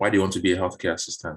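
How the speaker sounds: quick, plain delivery. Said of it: "it's just".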